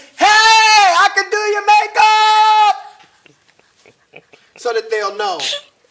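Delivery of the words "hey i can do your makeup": very high, loud, slow scream. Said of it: "get on the mountaintop and scream".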